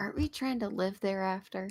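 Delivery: hushed half-whisper, voice dropped away. Speaking in character to Brick House, leaning in: half-whispering in character. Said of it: "I'm gonna whisper to him".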